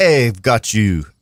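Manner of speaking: put-on low, very slow, drawn-out French accent. A speaker retells what a guy said to them, accidental French accent. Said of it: "I didn't mean to do a French accent".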